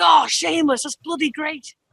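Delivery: dad voice gushing with delight. Retelling how the speaker's dad reacted: imitating excited dad. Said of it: "My dad got super excited. He's like".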